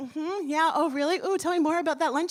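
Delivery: mock feigned interest. Retelling sitting at dinner hiding the news: imitating own feigned interest. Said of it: "Pretending like nothing's happened".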